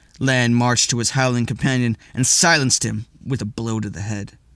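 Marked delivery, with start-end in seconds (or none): none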